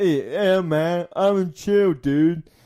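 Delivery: very slow speech, every word dragged out. Describing a wrestler from a documentary: Matt Riddle impression. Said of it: "he talked like".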